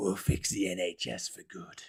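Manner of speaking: slow, breathy, hushed, husky mob-boss growl. Reading a headline aloud in a husky mafioso voice. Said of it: "in a mafioso voice? ... I went all, all husky there".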